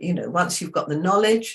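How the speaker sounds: ordinary delivery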